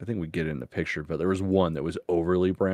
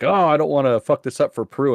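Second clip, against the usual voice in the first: put-on panicked outburst, higher and louder; 8 semitones higher, 8 dB louder than usual. Retelling how he reacted: imitating Ian freaking out. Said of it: "he was, like, freaking out".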